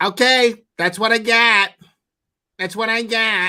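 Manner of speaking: very high pitch, condescending tone. Mocking how a woman always ends her monologues: mock-patronizing Karen voice. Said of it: "like a weird, patronizing Karen voice".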